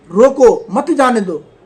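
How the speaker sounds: brief pause after the word 'roko'. Speaker reads the same line a second way to change its meaning: pause after 'roko'. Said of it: "इसी line को दूसरे तरीके से पढ़ता हूँ".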